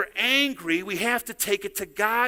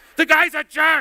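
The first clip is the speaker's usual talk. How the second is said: mimicked scream, higher and louder; 7 semitones higher, 10 dB louder than usual. Retelling a brother screaming at a driver who cut him off: imitating someone screaming. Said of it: "He's, like, screaming at the guy".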